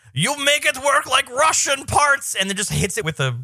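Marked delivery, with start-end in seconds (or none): 0.2-2.4 put-on comic, very high, slow Russian accent. Retelling a movie scene with the comic relief Russian guy: imitating his voice. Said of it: "the comic relief Russian guy is just like".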